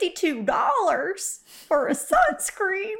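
put-on Texas accent. Host imitating how some listeners talk, in a Texas impression. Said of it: "that was my Texas impression".

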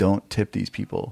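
ordinary delivery

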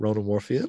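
Moorfield lifted with a surprised, question-like rising tune. Repeating how he said his own name, questioning rise on Moorfield. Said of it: "I sound surprised".

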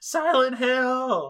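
put-on very high, loud shriek, "hill" stretched. Retelling a movie scene of a girl at a cliff: imitating a scream. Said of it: "Sharon is screaming".

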